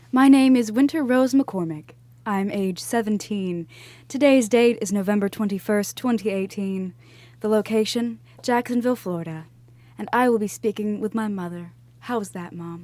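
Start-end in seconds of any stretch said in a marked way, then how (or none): 0.1-11.7 put-on radio announcer voice, broadcaster read. A teenage daughter opens a recorded interview with her mother, radio announcer voice. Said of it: "I read it in my radio announcer voice".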